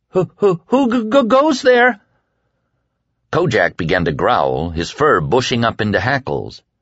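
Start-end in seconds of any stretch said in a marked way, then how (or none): 0.1-2.0 very high, quavering, nervous voice. A young voice calls out of the dark, nervous and quavering. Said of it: "nervous voice quavered out of the dark".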